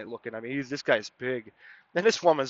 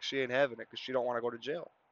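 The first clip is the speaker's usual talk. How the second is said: ordinary delivery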